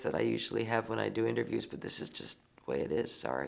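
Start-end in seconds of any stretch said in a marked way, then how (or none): 1.7-3.5 low, scratchy, worn-out, half-whispered voice. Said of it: "I wish I had that clarion type voice".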